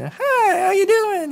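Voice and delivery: cheery, jovial, bright and very high-pitched voice. Retelling a phone call to the Easter Bunny, imitating jovial Easter Bunny voice. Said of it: "he had like this jovial voice".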